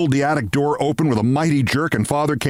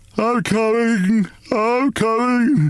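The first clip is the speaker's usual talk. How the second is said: slow, sleepy, drawn-out high wail; 8 semitones higher than usual. A father woken by battering on the attic door calls out, slow, sleepy wail. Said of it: "he wailed in a slow, sleepy voice".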